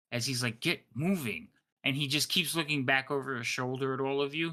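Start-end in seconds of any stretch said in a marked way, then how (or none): 0.6-1.5 openly frustrated, impatient tone. Game master voicing Elix hurrying Scratch along, frustrated and impatient. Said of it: "you could hear the frustration in um Elix's voice".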